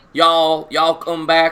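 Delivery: loud, put-on Southern US accent. Trying to imagine how it sounds, attempting a southern accent. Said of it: "the southern accent".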